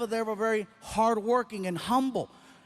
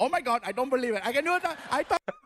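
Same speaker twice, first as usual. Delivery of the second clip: put-on excited Indian accent; 2 semitones higher than usual. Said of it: "we're pulling out the Indian accent".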